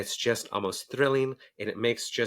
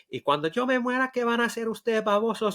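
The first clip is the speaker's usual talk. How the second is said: put-on cranky mother voice, Latin American accent, much higher; 12 semitones higher, 3 dB louder than usual. Recalling the bit she leaned into with him, a cranky Latin mom impression. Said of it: "lean into the cranky Latin mom".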